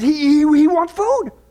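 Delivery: put-on frightened, slow, halting stutter. Retelling a story, a man asks the stranger at the window: imitating a terrified voice. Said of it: "he's terrified".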